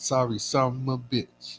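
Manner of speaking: slow, deliberate, measured delivery. Quoting a comedian's catchphrase after apologizing: Bernie Mac impression. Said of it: "Like Bernie Mac would say".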